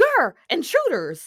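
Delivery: high-pitched, animated cartoon character voice. Retelling a cartoon episode, quoting a character: Zim voice. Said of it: "Zim is like".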